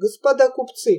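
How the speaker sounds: ordinary delivery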